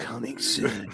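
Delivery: cinematic trailer announcer narration. Podcast hosts riffing on announcements, doing a movie trailer announcer voice. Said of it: "Do everything like a movie trailer".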